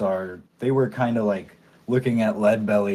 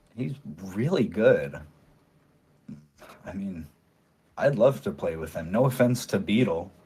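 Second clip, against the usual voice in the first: hushed, close voice; 2 semitones lower, 4 dB quieter than usual. As the bandmate stepping off her stool to lean close, in a hushed voice. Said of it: "in a hushed voice says".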